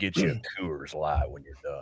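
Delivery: very low, smooth voice. Imagining Sam Elliott as narrator: Sam Elliott voice. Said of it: "Sam Elliott would be, ... he'd be like".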